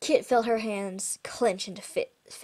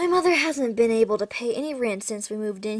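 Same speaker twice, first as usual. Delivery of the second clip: usual speaking voice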